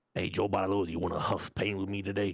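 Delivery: very low put-on character voice, dropped right down. Imitating Nick eight thirty offering whippets at TwitchCon: imitating Nick eight thirty. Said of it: "He sounds like this dude".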